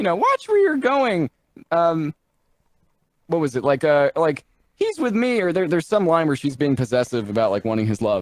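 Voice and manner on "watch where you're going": mock yell, much higher. Recounting a scene where a little fairy yells at him: retelling a fairy's yell. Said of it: "she yells at him".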